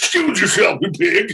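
shrill, very high, loud cartoon voice. Recalling an early show and doing a voice from it: King Hippo voice. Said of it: "this guy named King Hippo".

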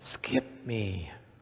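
soft, pushed stage whisper. Retelling the man asking again to be skipped: retelling a louder whisper. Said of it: "in a louder whisper".

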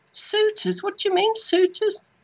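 put-on Dudley accent. Retelling his reply when she mentioned suitors, speaker uses his Dudley accent. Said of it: "in my Dudley accent".

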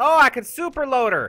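thrilled, excited yell. A gamer discovering mid-game that they can super load, excited yell. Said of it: "I didn't mean to yell".

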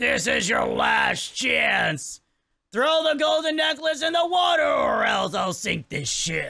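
watery, bubbly, underwater gurgle through every word. Voicing an underwater character in a game; gurgling underwater voice. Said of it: "so he has to make gurgling noises".

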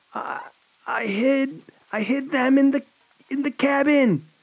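fearful gasping for air. Narrator reading the captive woman's answer to her captor, gasping, fearful and in pain. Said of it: ""Please, you have to help. He's coming," [name] gasped".

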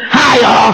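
put-on little raspy country bumpkin Nashville accent. Imitating the pastor's greeting: country Nashville Pastor Tim voice. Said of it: "That little country bumpkin Nashville".

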